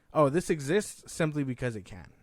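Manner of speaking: ordinary talk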